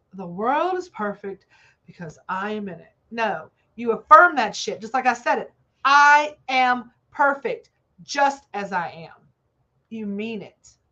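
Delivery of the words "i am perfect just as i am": very slow, firm, fully meant, authoritative delivery. Coaching listeners on how to say an affirmation: with authority. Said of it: "Say it with authority".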